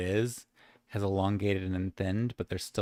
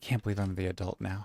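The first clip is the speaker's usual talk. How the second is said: hushed, whispering voice. Voicing Bonnie, who looks at a player: whispering. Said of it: "kind of whispered".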